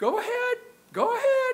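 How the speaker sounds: put-on very high old woman voice. Retelling how Jean showed irritation: imitating Jean's high-pitched voice. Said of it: "in a high-pitched voice say".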